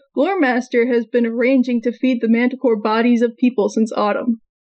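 ordinary talk

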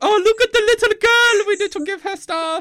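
fake Italian accent, pitched very high. Speaker imitates people reacting to a young-looking 25-year-old, in a put-on italian accent. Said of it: "I don't know why I put on that voice".

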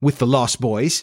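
plain

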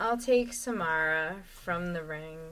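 low, soft, disappointed delivery.

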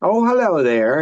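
smarmy, smooth charm of a cad. Retelling the cousin leaning in the car window: imitating a charming cad. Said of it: "he's very charming, but he's an asshole".

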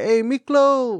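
high, drawn-out, stretched calling voice.

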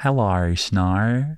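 put-on Australian accent with Snow drawn out. Showing how the new name should be said, in an Australian accent. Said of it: "you have to say it in an Australian accent though".

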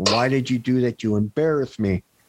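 ordinary talk

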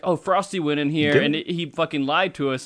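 usual speaking voice

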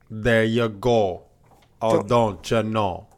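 mock put-on Jamaican accent. Host plugging new Patreon episodes, slipping into a mock Jamaican accent. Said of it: "You sound a Jamaican".

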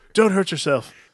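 high, loud mock worried pleading. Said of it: "It's like".

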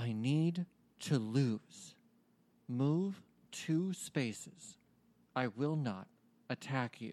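whispered. A game master voices a hidden speaker heard in a player's ear, whispering in the listener's ear. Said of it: "in a whisper".

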